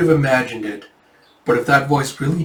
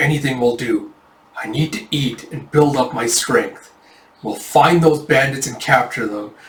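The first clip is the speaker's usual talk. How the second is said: mock fierce, angry, resolute, determined delivery. Retelling a character recovering his spirit: imitating angry determination. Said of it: "this angry, determined look on his face".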